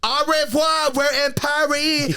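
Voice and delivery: very slow, high-pitched, drawn-out, ditzy, dopey voice. Imitating Will Vicky on her Instagram: Will Vicky impression. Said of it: "she'll be like".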